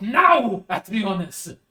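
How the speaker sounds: shouting out. Narrating a scene and voicing the judge who yells out, yelling. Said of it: "The judge yells out".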